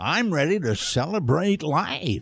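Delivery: put-on slow, elderly old-man commercial announcer voice. Asked to tell the story like the old man in the insurance commercial: old man in insurance commercial voice. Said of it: "told it like the old man in the insurance commercial".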